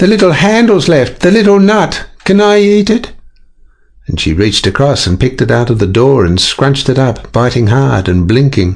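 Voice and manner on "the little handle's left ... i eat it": shrill, very high-pitched shriek. Narrator reads Moon calling out to Daddy, shrieking. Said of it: "shrieked Moon".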